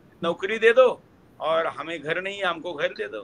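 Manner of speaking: plain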